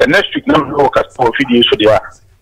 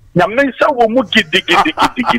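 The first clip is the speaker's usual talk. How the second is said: high, happy, excited voice. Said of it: "I feel the happiness, excitement in your voice".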